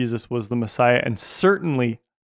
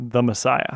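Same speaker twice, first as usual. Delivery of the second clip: usual speaking voice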